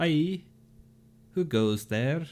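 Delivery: put-on Scandinavian accent, called out. A game master voices the eldest of three strangers challenging the travellers, Scandinavian accent. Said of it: "I've decided Bjornings are Scandinavian".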